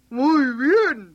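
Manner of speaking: loud shout, yelled out in full cry. The coachman, having roped the new donkey by the neck, cries out: shouting. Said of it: "Gritó".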